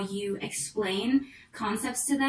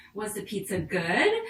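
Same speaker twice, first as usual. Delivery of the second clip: pitch rises on the word good; 3 semitones lower than usual. Teaching question intonation to listeners, rising pitch on good. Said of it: "When I ask the question, does my voice go up?".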